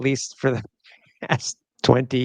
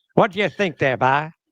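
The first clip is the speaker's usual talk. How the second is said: light, put-on East Coast accent; 3 semitones higher than usual. Host suggesting doing the show in a Southern accent, East Coast accent. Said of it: "that's a little more East Coast".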